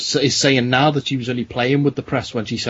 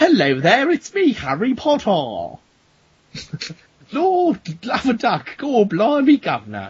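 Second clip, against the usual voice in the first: angry put-on voice, much higher pitch; 8 semitones higher than usual. Showing how they talk when someone asks about a movie, mad Harry Potter voice. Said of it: "Why are you talking in that mad voice?".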